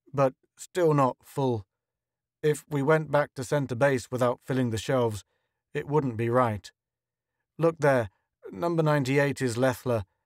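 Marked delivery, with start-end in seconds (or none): none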